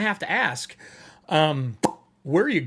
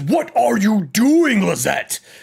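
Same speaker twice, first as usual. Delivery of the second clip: loud, resounding, booming voice; 3 semitones higher, 5 dB louder than usual. Game master voicing an unseen voice from upstairs calling to lizette, booming voice. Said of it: "There's a booming voice in Draconic that says".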